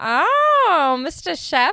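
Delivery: 'oh' stretched long with a swooping pitch. Showing the nanny impression they always did: The Nanny impression. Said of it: "Did you ever do any nanny impressions?".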